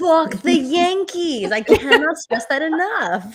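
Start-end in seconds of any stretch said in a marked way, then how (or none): 0.0-1.5 put-on New York accent, pitched up. Answering a question about the Yankees, in a New York accent. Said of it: "I gotta say it with the New York accent".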